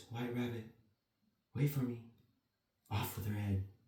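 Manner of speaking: drowsy, half asleep, hushed half-whisper. Narrator reads Alice's words as she falls asleep, in a sleepy half-whisper. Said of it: "She whispered in a sleepy voice".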